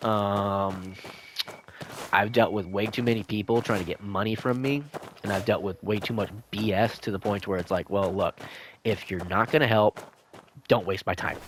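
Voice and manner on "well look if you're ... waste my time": put-on rough manner, curt, clipped words. Retelling own words to people who waste time: imitating own rough manner. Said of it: "I come off really, really, really rough".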